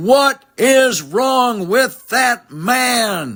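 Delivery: acted, very high, very slow, stretched-out bellow. Retelling a reaction to the third pickoff throw: imitating Ron bellowing. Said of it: "bellow at the top of his voice".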